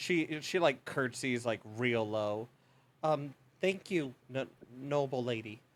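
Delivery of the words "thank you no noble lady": nervous, stuttering, stammering voice. Voicing a young housekeeper meeting a noble: stuttering nervous servant. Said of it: "she is stuttering a lot more".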